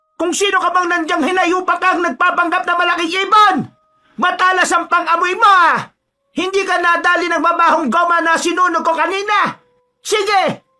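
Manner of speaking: sudden shrill, ringing, very high, loud yell. In a story, a mother shouts at someone posing as a big bird, sudden loud shout. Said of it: "biglang sumigaw ang kanyang ina".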